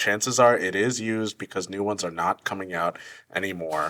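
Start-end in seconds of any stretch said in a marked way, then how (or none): none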